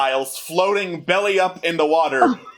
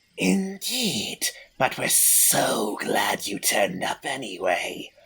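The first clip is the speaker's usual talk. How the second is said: very slow, drawn-out hissing snake voice; 8 semitones lower, 6 dB quieter than usual. Voicing a Yuan-Ti emerging from shadows to greet the party: hissing Yuan-Ti voice. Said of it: "then you hear a hissing".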